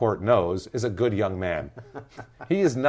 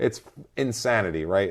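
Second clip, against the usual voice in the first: usual speaking voice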